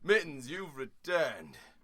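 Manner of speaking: animated storyteller narrator voice with swooping pitch. Voicing the captain greeting Mittens as Mittens moves in, narrator's voice. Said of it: "in the narrator's voice".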